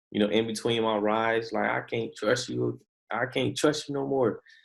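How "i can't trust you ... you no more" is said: acted, heated yelling outburst held small. Recalling yelling at him between Uber rides at night, retelling a yell. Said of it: "I was yelling at him".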